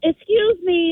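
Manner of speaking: mock-gentle while angry. Retelling saying excuse me when the teenager stood up, forced gentle tone. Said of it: "trying to be like, talk gentle".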